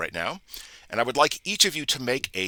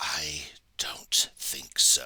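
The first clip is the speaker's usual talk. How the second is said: very slow, drawn-out whisper; 8 semitones lower, 6 dB quieter than usual. Narrating a scene to players as a mysterious voice speaks; whispering voice. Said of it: "there's a whispering voice that comes to your ears".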